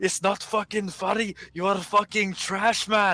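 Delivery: put-on angry yell. Retelling a gaming friend getting mad at lag: imitating someone yelling angrily. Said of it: "you yelling at me".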